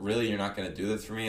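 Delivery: ordinary delivery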